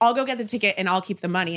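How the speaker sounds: normal talking voice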